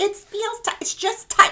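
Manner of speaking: very high, squeaky put-on whine. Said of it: "She's like".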